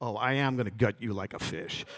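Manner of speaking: imitated furious, angry tone. Retelling snapping into character and threatening a fellow actor: retelling a furious threat. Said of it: "I got pissed".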